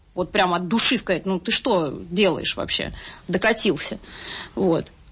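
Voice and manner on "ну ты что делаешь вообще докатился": normal talking voice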